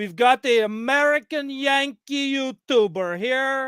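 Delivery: put-on Quebec French accent. Joking about an American Yankee YouTuber: put-on Quebec-sounding accent. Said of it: "that sounded Quebec".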